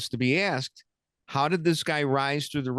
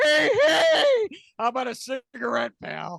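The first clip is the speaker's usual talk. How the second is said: very high radio voice with big pitch swings; 10 semitones higher, 4 dB louder than usual. Asked to do his bit on the radio: Jack Brickhouse impression. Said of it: "I did an impersonation of Jack Brickhouse".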